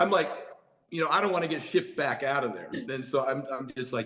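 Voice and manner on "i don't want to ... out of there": plain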